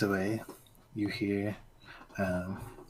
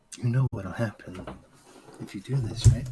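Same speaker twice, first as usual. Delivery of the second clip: very gentle, feminine coo. Narrating a scene where a voice breaks through, in a gently cooing feminine voice. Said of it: "a feminine voice, as it seems to coo ever so gently".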